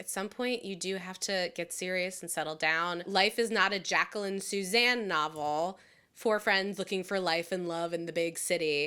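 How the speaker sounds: usual speaking voice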